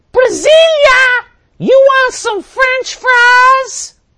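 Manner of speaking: very loud, high shriek, word "fries" stretched out. Speaker retells how a woman's friend screamed out to her: retelling a scream. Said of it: "she screams out".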